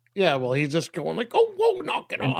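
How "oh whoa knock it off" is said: put-on old prospector voice, higher. Retelling Pop reacting to bikers circling him: imitating Pop's old prospector voice. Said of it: "he sounds like an old prospector".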